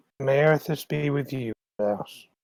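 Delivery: quiet mumble, barely voiced, under the breath. After a man blesses them and walks out, the character mumbles under breath. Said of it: "I kind of mumble under my breath".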